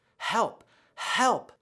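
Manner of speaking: urgent, high, airy whisper. Demonstrating a sound for listeners to practice, urgent whisper. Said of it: "try whispering the word help with some urgency".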